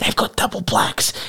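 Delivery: hushed, secretive, gossipy whisper. Retelling how others at a party reacted: imitating a whisper. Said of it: "everyone started whispering".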